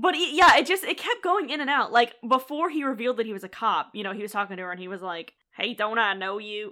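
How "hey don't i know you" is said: put-on jerk voice, much slower. Speaker retells how a man, before revealing he was a cop, talked to her: weird asshole voice. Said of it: "putting on a weird asshole voice".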